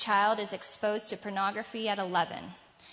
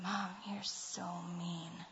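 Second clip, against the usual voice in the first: soft, slow, sulky under-the-breath mutter. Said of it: "under his breath".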